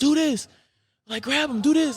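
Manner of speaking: shrill, very high, acted-out screaming. Recalling their high school coach on his knees in their corner, imitating a coach screaming. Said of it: "on his knees screaming".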